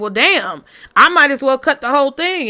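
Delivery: sarcastic quip in a sarcastic tone. Acting out a reply to someone asking for extra work: imitating a sarcastic remark. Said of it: "you sarcastically say".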